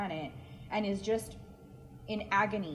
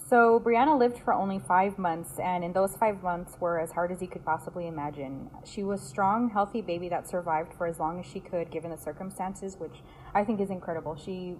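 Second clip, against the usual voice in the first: ordinary talk, nothing marked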